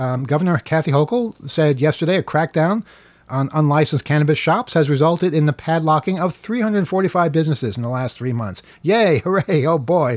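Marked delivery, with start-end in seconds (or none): 8.8-10.2 sarcastic, ironic cheer, slower. Reading cannabis news about padlocked shops on air, sarcastic cheer. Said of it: "don't be sarcastic".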